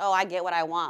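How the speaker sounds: ordinary delivery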